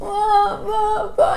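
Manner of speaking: high, mock baby crying wail.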